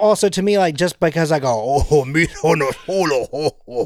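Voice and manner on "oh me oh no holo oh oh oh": put-on alien accent, babbling like a space slug. Speaker shows the other speaker how they do a Jabba accent. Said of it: "I can do the Jabba accent".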